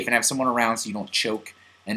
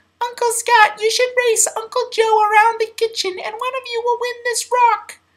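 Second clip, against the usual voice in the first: put-on tiny, adorable, very high little-kid voice. Retelling what his niece Ryan said to him, in her tiny, adorable voice. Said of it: "who has this like tiny, adorable voice".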